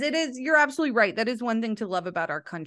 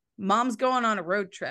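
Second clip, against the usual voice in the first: ordinary delivery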